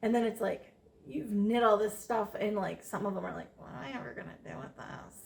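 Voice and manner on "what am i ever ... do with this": near-whispered put-on voice, ungrateful-sounding. Imitating a family member who was given knitted items: put-on voice of an ungrateful relative. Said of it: "I love that voice I just did".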